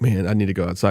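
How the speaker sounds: ordinary talk, nothing marked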